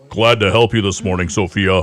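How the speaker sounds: put-on deep, low radio voice. Imitating a security guard greeting someone: imitating Jay's deep radio voice. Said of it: "he has a really deep radio voice".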